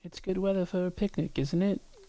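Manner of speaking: high-pitched put-on British accent. Describing a video game's bar-wench character and quoting her, British accent. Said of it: "She says with a British accent".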